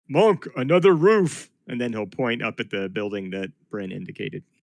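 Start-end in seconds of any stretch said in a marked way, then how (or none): 0.1-1.5 loud, booming giant bellow. A player voices Fitz calling out to Monk: big Goliath bellow. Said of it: "bellow out in a big Goliath voice".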